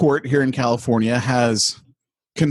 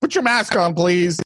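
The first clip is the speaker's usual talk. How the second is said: put-on woman's voice, higher; 5 semitones higher than usual. Retelling what a shopper in the checkout line said: imitating a lady shopper. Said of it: "like someone who, who is just shopping there".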